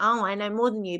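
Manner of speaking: ordinary delivery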